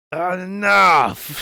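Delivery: mock loud angry voice. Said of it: "Why you raising your voice?".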